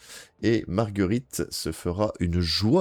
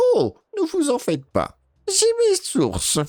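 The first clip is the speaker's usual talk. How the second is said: put-on very high, swooping little old lady voice; 4 dB louder than usual. An old woman replies to the new bookshop owner, in an old granny voice. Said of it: "c'est exactement la voix que je fais".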